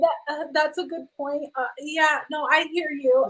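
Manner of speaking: nervous, slow, halting stutter, tripping over words. Imitating a scared houseguest stammering a reply: imitating someone stuttering nervously. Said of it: "Stuttering just like Nicole".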